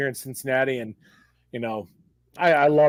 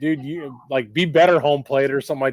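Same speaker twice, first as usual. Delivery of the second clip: ordinary talk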